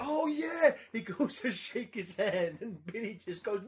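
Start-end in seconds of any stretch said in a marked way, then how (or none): 0.0-0.7 acted, very high, loud, overjoyed delighted cry. Retelling a passerby's reaction, imitating a big beaming smile. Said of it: "the biggest fucking smile".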